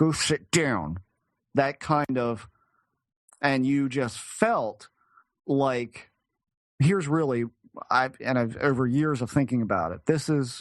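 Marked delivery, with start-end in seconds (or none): 0.0-1.0 mock stern, angry teacher voice through clenched teeth. Retelling the command a voice gave: imitating an angry school teacher. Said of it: "really angry, uh, school teacher way of".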